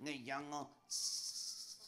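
put-on slow puppet voice with American-sounding accent.

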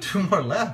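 slow, laughing disbelief.

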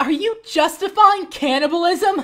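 very high-pitched, indignant, angry outburst. Arguing with a companion in a scene: angry. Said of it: "I don't know what you're so mad about".

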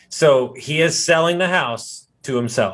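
slow, deliberate, emphatic delivery. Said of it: "I wanna say it one more time".

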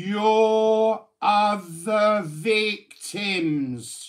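slow, deliberate emphasis, "your" drawn out. Speaker repeats a point to the person stalking them, slow emphasis on 'other victims'. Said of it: "I'll emphasize that very slowly".

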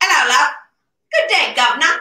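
put-on London Cockney accent. An English teacher shows off speaking Great Britannish: Cockney accent. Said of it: "That's Cockney".

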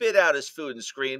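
ordinary delivery

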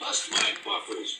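low, half-voiced mutter under the breath. Narrator reads a character stuck in a muddy pond, muttered. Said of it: "muttered Thomas".

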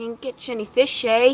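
poor put-on Canadian accent. Dad practicing accents for a planned accent show, in a bad canadian accent. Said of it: "he's doing his Canadian accent".

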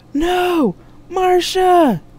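loud, high, cried-out yell. Jack cries out as marsha's ship disappears from the screen, yelled. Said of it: "Jack yelled".

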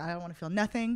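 plain

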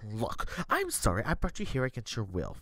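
grudging, forced through clenched, gritted teeth. In a roleplay, Prodigal speaks to another character, forced through gritted teeth. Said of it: "gnarshing her teeth like she's forcing to say every word through her lips".

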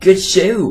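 super high-pitched cartoon-style voice. Quoting a line from Regular Show, in a Pops from Regular Show voice. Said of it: "he's got a super high-pitched voice".

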